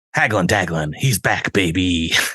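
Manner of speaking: put-on pushy salesman voice. Voicing a salesman character pitching his deals: Hagglin' Dagglin' salesman voice. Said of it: "that's what his voice sounds like now".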